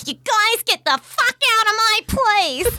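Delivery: whiny, very high-pitched shout. Mocking a bad actor trying hard to imitate shouting, in a whiny, bad Samuel L. Jackson impression. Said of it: "he's just that whiny voice".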